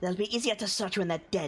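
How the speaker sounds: words forced out through clenched, gritted teeth. Azaka speaks while Duncan is holding the thing down, through gritted teeth. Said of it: "through gritted teeth".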